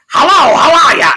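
very high, very loud, belted shrill voice. Retelling an interview clip, quoting the comedian's greeting: Gilbert Gottfried voice. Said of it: "in that Gilbert Gottfried voice".

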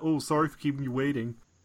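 put-on Canadian accent. Retelling what a very Canadian dentist actually said: imitating a Canadian dentist. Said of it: "He was like".

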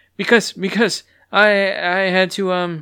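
halting, high-pitched stammer, repeating words. Reading a character answering a guard's question, stuttering.

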